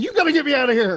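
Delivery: very high-pitched, yelly, manic human voice. Narrating as Derek comes running to the cell, retelling a manic yell. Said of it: "you hear him yelling".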